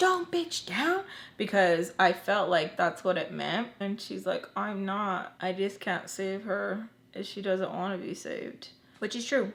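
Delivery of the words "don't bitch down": put-on very high, furious, angry shriek. Retelling an argument with Tommy; mock-screaming angrily. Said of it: "I scream at Tommy and I'm like".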